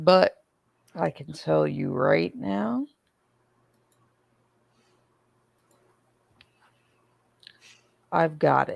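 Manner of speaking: hoarse, raspy voice that keeps cracking. Starting a stream while apologizing for the voice: hoarse voice, keeps cracking. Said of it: "I sound like I smoke multiple packs a day".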